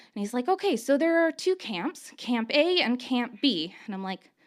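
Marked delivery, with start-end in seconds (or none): 0.5-3.8 imitated almost-joking tone, higher pitch. Retelling how a doctor began a routine spiel: imitating an almost joking tone. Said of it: "in an almost joking tone".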